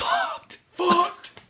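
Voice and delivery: mouthed, exhaled, high breathy delivery. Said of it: "like, exhaling".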